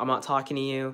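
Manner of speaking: ordinary talk, nothing marked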